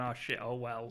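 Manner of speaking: plain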